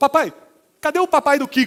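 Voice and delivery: put-on outraged, indignant little child's voice, high and loud. Retelling a three-year-old son's question while watching tv: imitating an indignant child. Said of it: "ele chegou pra mim indignado".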